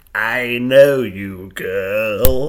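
put-on very loud witchy crone creature voice, girl drawn out. Retelling a woman pointing a finger and addressing a girl: Skeksis-like creature voice. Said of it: "you think you sound like a Skeksy?".

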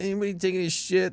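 put-on drunk man's voice. Retelling what a drunk guy in the bathroom line said: imitating a hammered guy's voice. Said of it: "That was literally his voice".

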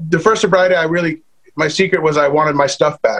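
ordinary talk, nothing marked

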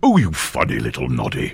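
low put-on voice swooping around. A voiceover artist, asked by the host to do it again, gives the Big Ears voice. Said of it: "the Big Ears impression".

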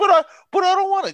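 put-on crying voice. Retelling a show scene where a frightened character cries: imitating a crying character. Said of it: "he's crying like a little bitch".

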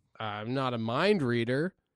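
normal talking voice

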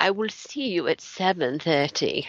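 British accent. Demonstrating how British people say it, in a British accent. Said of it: "I want to hear your English accent".

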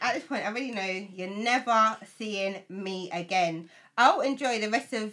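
ordinary talk

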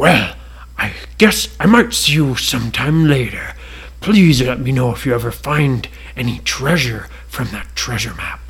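deep, big dragon character voice. Reading a story aloud, speaking as the dragon, big red dragon voice. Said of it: "And they looked over and they saw a big red dragon. / and the dragon caught it in his mouth, / Maybe this map".

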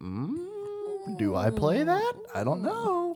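very high, puzzled, unsure mock voice. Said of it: "which I was kind of like".

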